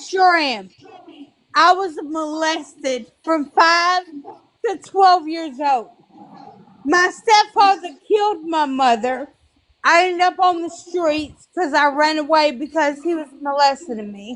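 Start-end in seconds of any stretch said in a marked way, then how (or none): 1.5-14.4 on the verge of crying, voice breaking. Telling others about past abuse and losses, about to cry. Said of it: "yeah, I'm about to cry".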